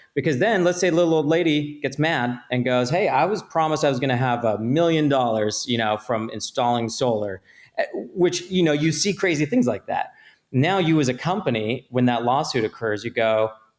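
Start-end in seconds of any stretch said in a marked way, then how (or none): none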